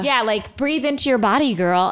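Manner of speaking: ordinary talk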